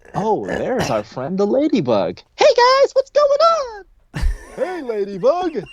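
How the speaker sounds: very high storybook ladybug voice. Showing how a children's book is narrated: ladybug character voice. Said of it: "talking to yourself in different voices".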